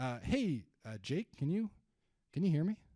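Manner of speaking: puzzled, inquisitive, confused and curious tone. Showing the group an example call to an inbound lead, confused, curious tone. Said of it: "I'm going to use a confused and a curious tone here".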